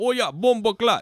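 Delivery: very high, shrill, put-on Jamaican accent. Imagining a chinese man speaking, the speaker puts on a jamaican accent. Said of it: "Jamaican accents".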